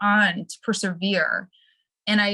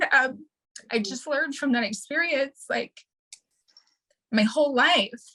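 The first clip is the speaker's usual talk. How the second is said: tearful, high voice cracking while crying; 5 semitones higher than usual. Telling their own story of learning from that experience: crying while speaking. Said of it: "I'm sorry, I'm crying".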